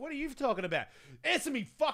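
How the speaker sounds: put-on very high, shrill, loud, super aggressive voice. Retelling being stopped and yelled at by someone: imitating someone getting super aggressive. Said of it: "getting super aggressive with me".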